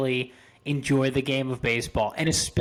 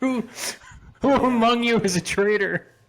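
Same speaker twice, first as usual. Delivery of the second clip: put-on drunken shouting, higher; 9 semitones higher, 3 dB louder than usual. Acting out a reprimanded drunk person who shouts at everyone: imitating a drunk person shouting. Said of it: "shouts at everyone around them".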